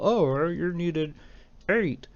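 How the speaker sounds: high, slow, drawn-out put-on frog puppet voice. Speaker redoes a line he should have said, in a Kermit the Frog impression. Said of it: "You like my Kermit the Frog impression?".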